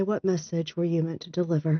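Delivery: hushed whisper. Role-playing player holding a bracelet and addressing it, whispering. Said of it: "I'm going to willow whisper and say".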